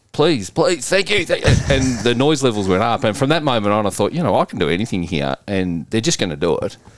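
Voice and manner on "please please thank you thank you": shrill, very high-pitched screaming. Speaker recalls screaming while engaged in a drill at a presentation, retelling a scream. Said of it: "I'm engaged in this drill and I'm screaming".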